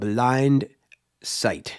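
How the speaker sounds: carefully slow, deliberate delivery. Plugging another creator's channel at the end, saying the name slow and deliberate. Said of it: "so let me say it slow".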